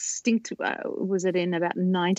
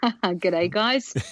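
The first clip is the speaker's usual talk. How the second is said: fake, put-on Australian accent. Greeting the others in a practiced put-on Australian accent. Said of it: "You can tell I've been practicing my accent".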